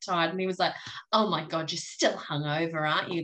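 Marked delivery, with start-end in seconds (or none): 1.1-3.2 put-on disgusted tone. Retelling a remark on Monday about still being hungover: imitating someone's disgust. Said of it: "with complete di-, disgust".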